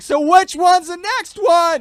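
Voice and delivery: very high, very loud, shrill, drawn-out scream. Retelling how a mom on the bus asked questions: imitating someone screaming. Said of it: "She starts screaming".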